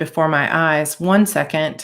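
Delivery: plain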